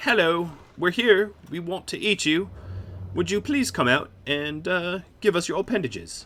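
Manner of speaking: put-on, oddball British accent, high pitch. Voicing cannibals announcing themselves before eating people, in a weird British accent. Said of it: "Why they have weird British accents?".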